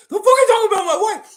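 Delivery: very loud, high-pitched, angry yell. Repeating the bit after asking if it was pretty good, Will Smith at the Oscars impression. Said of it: "Was that pretty good?".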